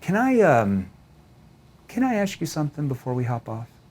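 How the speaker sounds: caring, empathetic delivery in a low, concerned tone. Demonstrating a tone shift when asking a question: concerned tone. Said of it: "Notice my tone shifts down into what? Kind of a concerned tone. A tone that shows empathy".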